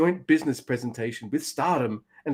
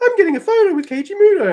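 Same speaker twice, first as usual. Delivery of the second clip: very high, loud, eager star-struck fan voice; 7 dB louder than usual. Mocking a friend in a photo, imitating an excited fan. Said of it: "being like".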